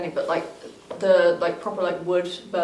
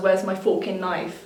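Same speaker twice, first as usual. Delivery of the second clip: ordinary talk, nothing marked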